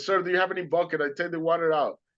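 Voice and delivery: hurried, urgent, calling out. Retelling what he yelled on a flooded boat: retelling his own yell. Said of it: "I yelled to these guys".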